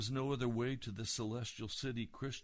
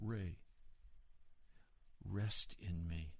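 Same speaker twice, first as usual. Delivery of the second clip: very soft, kind and gentle voice; 4 semitones lower, 6 dB quieter than usual. Retelling the Lord speaking to him by name, in a kind, gentle voice. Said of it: "in a very kind and gentle voice".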